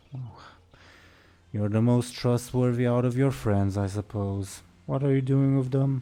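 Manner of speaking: spoken through a sigh. Voicing the undead security chief questioning a player character: sighing. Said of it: "She sighs and says".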